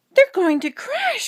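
with a gasp. Stellaluna watches her friends flying in the dark; gasped. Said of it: "gasped Stellaluna".

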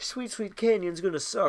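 speaking through a yawn. Playing a racing game and commenting, yawning while talking. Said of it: "Sorry, I'm yawning".

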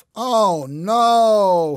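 groaning. Just back in bed when the alarm goes off, he groans. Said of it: "he groaned".

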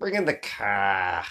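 very low put-on Boston accent, "car" drawn out. Speaker quotes a character from what they are watching, Boston accent. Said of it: "What is that accent?".

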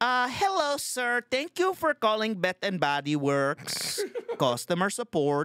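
put-on Filipino accent. Imitating a customer support agent on the phone: imitating a filipino accent. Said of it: "the Filipino accent".

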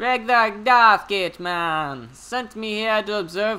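put-on Jamaican accent. Told they must be Jamaican for the voice acting, the speaker plays the role in a Jamaican accent. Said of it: "you have to be Jamaican".

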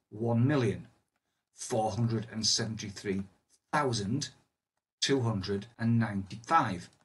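paused after each group of digits. Reading a large number aloud to show listeners the gaps, pausing between number groups. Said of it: "hopefully you can hear a pause in my voice".

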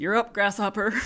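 great put-on Southern American accent. Retelling what the charge nurse said to her, imitating a Southern accent. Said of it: "he had this great Southern accent".

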